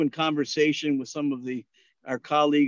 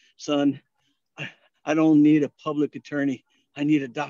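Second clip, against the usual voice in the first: put-on halting, short-of-breath speech; 4 dB louder than usual. Retelling a short-of-breath patient's reply: imitating halting, breathless speech. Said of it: "with his halting breath".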